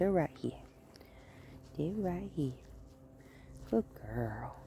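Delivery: very soft, hushed, gentle tone. Walking a dog on a short leash and praising her: gentle voice to a dog. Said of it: "Real gentle voice with her".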